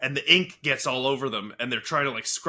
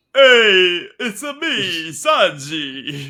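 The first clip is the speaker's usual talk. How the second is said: cheesy dub voice, much louder and higher; 5 semitones higher, 9 dB louder than usual. Two speakers mock a dub localization: Sanji's 4Kids dub voice. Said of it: "Sanji's 4Kids voice".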